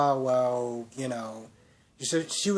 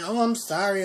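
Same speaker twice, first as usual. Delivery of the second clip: put-on, irritated, annoyed-sounding tone, pitched up; 6 semitones higher than usual. Imitating a show character's apology to mock it: imitating Sammy sounding irritated. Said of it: "you sound so damn irritated to say".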